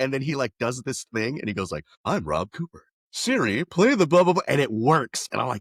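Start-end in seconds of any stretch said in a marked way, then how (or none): 2.0-4.4 animated, loud, swooping sing-song put-on inflection. Retelling how someone imitated Rob to command a car assistant: imitating Rob's talking inflection. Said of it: "he does an impression of me".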